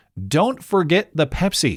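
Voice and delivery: put-on inappropriately bossy, smug commanding tone. Retelling a beggar's demand: imitating a smirking commanding tone. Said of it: "with a smirk and an inappropriately commanding tone".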